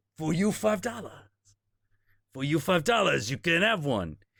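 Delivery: put-on Creole-accented speech. Retelling a late-night ice cream cart vendor naming his price, in a Creole accent. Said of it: "with a Creole accent".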